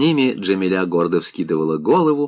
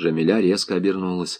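plain

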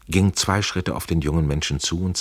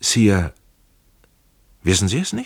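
halting, stumbling, stammering broken start; 3 semitones higher, 3 dB louder than usual. Young Trenk, overwhelmed during his examination, answers his sovereign, stammering. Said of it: "Er stammelte".

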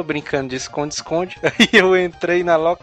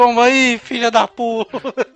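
play-acted high, shouted, mocking jeer; 7 semitones higher, 3 dB louder than usual. Speaker recalls yelling at a man who chased him and got hit by a ball: retelling a shout. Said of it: "E eu gritei".

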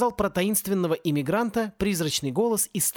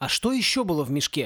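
ordinary delivery

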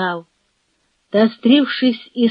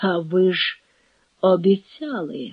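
plain reading voice

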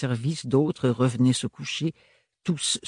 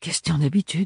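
low-key, offhand murmur; 4 semitones higher than usual. A young woman replies to her indignant aunt's question, murmuring. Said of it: "murmura Ophélie".

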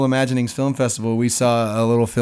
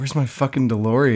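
ordinary delivery

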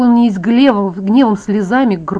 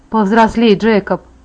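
ordinary delivery

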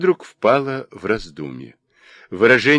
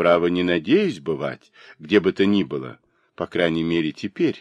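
usual speaking voice

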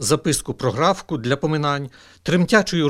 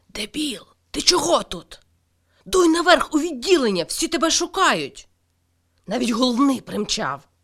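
angry, furious, breathless, panting whisper, much higher; 10 semitones higher than usual. A nurse comes into the chapel and addresses a man: angry breathless whisper. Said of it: "злий захеканий шепіт".

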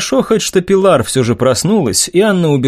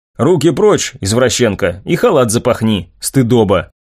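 ordinary delivery

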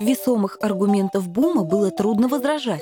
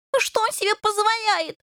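shrieking, screeching, much higher pitch; 12 semitones higher than usual. One of two separated fighters protests about the one who pulled them apart, shrieking. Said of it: "заверещал Рыжий".

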